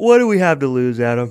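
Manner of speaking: said through a yawn. Speaker teasing a colleague about a risky take, saying it through a yawn. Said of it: "As you say that through a yawn".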